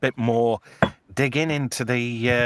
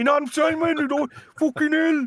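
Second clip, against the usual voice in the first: put-on South African or Brummie-like accent, higher. Imitating characters from District Nine, South African accent impression. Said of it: "you did the perfect impression".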